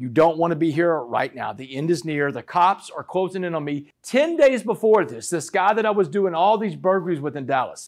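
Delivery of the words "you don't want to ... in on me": normal talking voice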